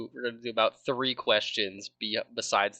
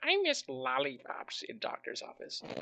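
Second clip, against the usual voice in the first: breathy, whispered cartoon-villain bad-guy voice; 7 semitones higher, 7 dB quieter than usual. Mocking a friend's line about lollipops: Doctor Doofenshmirtz voice. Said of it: "Why did you sound like Doctor Doofenshmirtz?".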